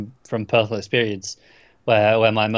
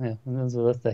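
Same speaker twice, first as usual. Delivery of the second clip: mumbled, undersold delivery, much quieter; 8 dB quieter than usual. Retelling a favourite trailer moment, quoting the actor's line in a mumble. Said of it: "you sort of mumbled".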